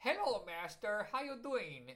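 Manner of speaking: put-on high-pitched Brooklyn accent. Listing a film's voice cast, the speaker does a favorite character: Bartok's high-pitched Brooklyn voice. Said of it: "high-pitched kind of Brooklyn voice".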